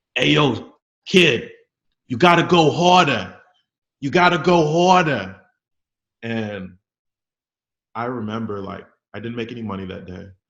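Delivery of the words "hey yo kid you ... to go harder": put-on thick New York accent, very loud and slow. Retelling what a stranger near the subway told him, with a huge new york accent. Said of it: "with a huge New York accent, he goes".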